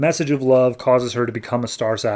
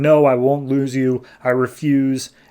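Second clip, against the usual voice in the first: furious, stubborn, pissed-off angry tone; 3 dB louder than usual. Retelling a comic scene where Saint Walker gets pissed off, imitating angry Saint Walker. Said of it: "he gets pissed off".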